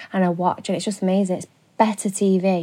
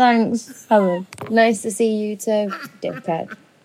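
very drawn-out, slow, polite-sounding sarcasm; 3 semitones higher than usual. Retelling own reply to Helen's remark: retelling own sarcastic reply. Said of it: "I was like".

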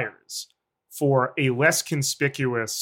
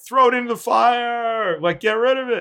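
play-acted, very high shrill scream, "fire" held long; 10 semitones higher, 4 dB louder than usual. Retelling Elrond urging Isildur to destroy the ring: imitating Elrond screaming. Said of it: "is nearby screaming".

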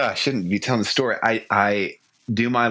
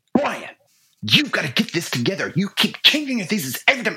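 put-on very high, hot, aggressive angry yell; 11 semitones higher than usual. Retelling snapping at a student helping with lines: retelling an angry yell. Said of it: "I yell at him".

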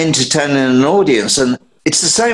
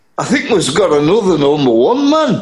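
bad, weak put-on Geordie accent; 3 semitones higher than usual. Retelling what Chas would say to the band, in a bad Geordie accent as Chas. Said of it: "That's a bad Geordie voice".

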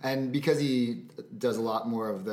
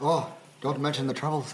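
put-on Irish accent with a lilt; 4 semitones higher than usual. Talking about the troubles in Northern Ireland, imitating an Irish speaker in an Irish accent. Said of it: "good accent work".

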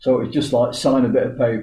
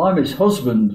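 ordinary talk, nothing marked

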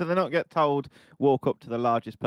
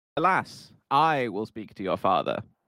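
put-on theatrical, old-English, Shakespearean stage delivery. Improvising a scene after the caller shouts Shakespeare: Shakespearean style.

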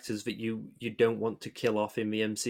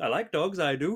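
terrible put-on Welsh accent; 6 semitones higher than usual. Retelling a character's line to the scroll council, in a bad welsh accent. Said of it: "that was a terrible Welsh accent".

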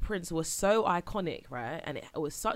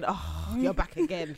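mock exasperated, weary sigh, very slow and drawn out. Acting out people on the street seeing an annoying character: imitating an exasperated sigh. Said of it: "everyone's sighing".

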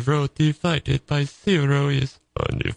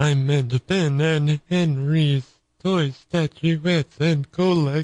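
robotic computer voice. Correcting his own slip about the show's name, in a Stephen Hawking voice. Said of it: "You're out of breath, Stephen Hawking".

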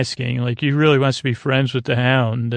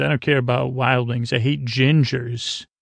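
normal talking voice

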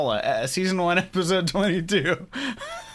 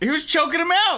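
excited shouting with voice shooting very high; 11 semitones higher, 3 dB louder than usual. Reacting to a fight where one man choked another: yelling. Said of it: "I'm yelling. I'm sorry".

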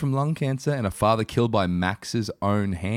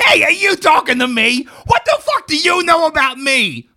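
very loud, very high, explosive furious yell; 8 dB louder than usual. Reading a scene aloud as Max, who is set to explode: yelling as Max. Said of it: "Yelled Max, set to explode".

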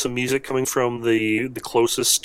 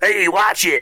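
put-on cranky, befuddled grumpy old man voice, pitched up; 7 semitones higher, 4 dB louder than usual. Voicing a befuddled elderly man grabbed by the coat: grumpy old man voice. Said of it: "He's like".

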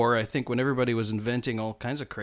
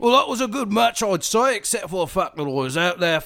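loud English footballer accent; 8 semitones higher, 5 dB louder than usual. Asked for a post-match interview as a Charlton Athletic player, English footballer accent. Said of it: "give me a bit more of your English accent as though you play for Charlton Athletic".

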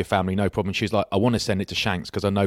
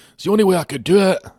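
put-on Scottish comedian voice, much higher and louder; 11 semitones higher, 6 dB louder than usual. Show the others the only Scottish impression you could do, a Scottish Billy Connolly impression. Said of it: "I used to have a Scottish impression".

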